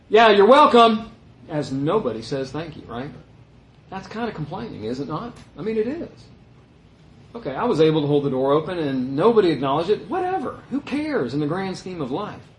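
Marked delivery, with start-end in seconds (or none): 0.1-1.1 very loud, pitched-up, sneering sarcastic fake courtesy. Speaker acting out holding a door for people who never say thanks, acting out a mocking thanks. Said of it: "we kind of mockingly go".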